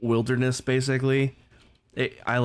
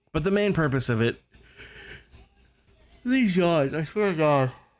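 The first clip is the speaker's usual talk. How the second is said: talking through a yawn, higher; 6 semitones higher than usual. Speaker mid-explanation, yawning while talking. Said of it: "I don't know why I'm yawning so much".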